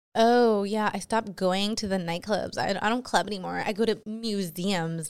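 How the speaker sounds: scornful, sarcastic mock pick-me girl voice. Mocking the type of girls who post like this, mocking pick-me girl voice. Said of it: "the exact same type of girls that post shit like".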